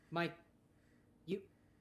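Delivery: normal talking voice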